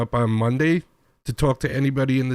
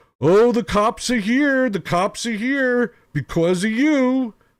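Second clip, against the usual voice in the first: mock hollering, high-pitched yell; 9 semitones higher than usual. Retelling what the owner's husband yelled down the hallway: imitating someone yelling. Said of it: "yelling this as he's walking down the hallway".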